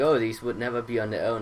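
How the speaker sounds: ordinary talk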